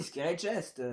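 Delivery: put-on English accent. Reading out a game object's name: English accent. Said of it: "mon parfait accent anglais".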